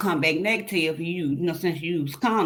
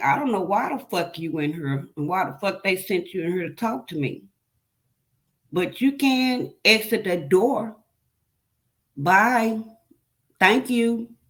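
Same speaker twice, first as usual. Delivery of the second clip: acted furious, heated, dismissive scolding, anger maxed. Retelling cursing out a visiting staff member: retelling own angry outburst. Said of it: "My anger's still on level ten".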